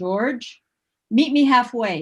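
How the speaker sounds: big, resounding, booming heavenly voice. Retelling the voice that answers George's prayer, in a booming voice. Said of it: "he heard hears this booming voice and it says".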